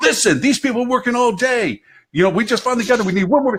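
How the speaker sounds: put-on very high, stressed, frazzled yell. Retelling how a frazzled counter agent yelled at clapping passengers: imitating a yelling counter agent. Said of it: "she yelled at them, going".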